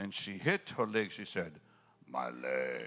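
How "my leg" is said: very low, very deep, manly voice. Retelling a woman hitting her leg, the speaker quotes her in a very manly voice. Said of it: "she spoke with a very manly voice".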